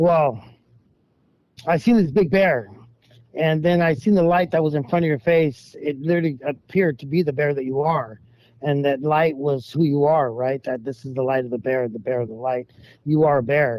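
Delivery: plain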